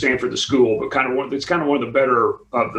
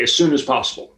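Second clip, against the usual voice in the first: sharp, cutting, quick delivery without hesitation. Retelling a teacher's answer to a question: imitating a sharp reply. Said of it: "he said it very sharply".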